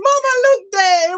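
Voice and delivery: high-pitched put-on Jamaican accent. Retelling what they heard him say at the end, in a jamaican accent. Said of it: "in my Jamaican accent".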